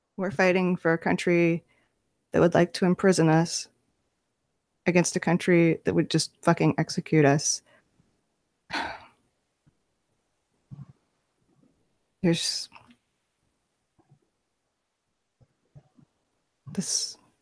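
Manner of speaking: kept very low, very quiet and hushed. A fighter speaks to companions about the choices they face, very quiet. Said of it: "And I say this very quietly".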